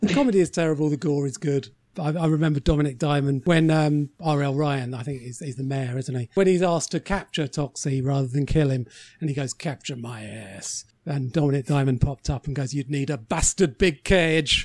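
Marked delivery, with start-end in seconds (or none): 12.7-14.7 put-on Scottish accent, slower pace. Recalling a joke from a TV presenter, doing a Dominic Diamond Scottish impression. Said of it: "Diamond Scottish?".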